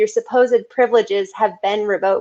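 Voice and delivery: ordinary talk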